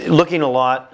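ordinary talk, nothing marked

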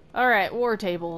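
ordinary talk, nothing marked

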